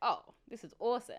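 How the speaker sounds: normal talking voice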